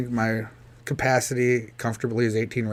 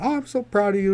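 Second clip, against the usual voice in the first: mock tearful, teary, pitched-up voice; 9 semitones higher than usual. Retelling the end of a long day, speaker imitates their mom tearing up. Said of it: "she's tearing up".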